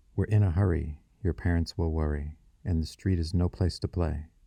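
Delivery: ordinary delivery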